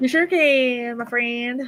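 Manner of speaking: nasal tone.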